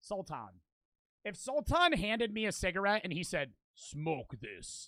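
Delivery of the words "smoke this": put-on scary voice, lower and quieter. Imagining Sultan handing over a cigarette, imitating Sultan's scary voice. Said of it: "in that scary ass voice".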